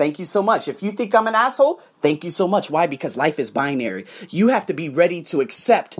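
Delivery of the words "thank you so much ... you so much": plain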